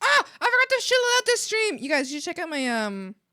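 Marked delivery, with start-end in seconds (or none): 0.0-1.8 abrupt, very high, shrill shriek. Suddenly remembering something forgotten during the stream: sudden scream. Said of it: "my apologies for suddenly screaming".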